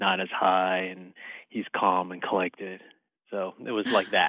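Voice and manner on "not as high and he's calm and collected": voice dropped an octave, low, calm, smooth, sleazy. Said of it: "what is an octave lower, you being sleazy, sound like".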